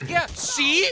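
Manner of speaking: high, loud, angry shouting.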